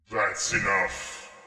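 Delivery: resounding, echoing boom. Game master voices a voice the players hear, booming and echoing. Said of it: "like it's like this booming, echoing voice".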